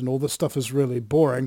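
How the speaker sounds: normal talking voice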